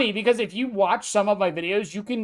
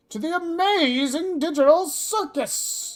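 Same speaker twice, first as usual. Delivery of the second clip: very high, come-one-come-all ringmaster showman call; 9 semitones higher than usual. Talking about reading books aloud, doing the come-one-come-all showman voice. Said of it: "do the come one, come all, that voice".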